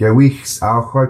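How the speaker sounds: slow, steady reading in a nice flow.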